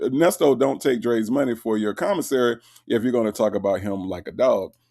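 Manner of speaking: ordinary delivery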